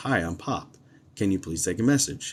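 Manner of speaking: ordinary talk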